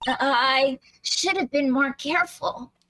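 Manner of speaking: acted, nervous character voice. Voicing Miss Faye in a game scene: nervous character voice. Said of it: "I decided she's very nervous".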